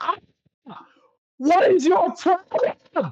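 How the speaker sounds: very shrill, high, drawn-out howl of pain. Voicing an entity screaming as a sword slams onto its chest: screaming. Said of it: "screaming for a second".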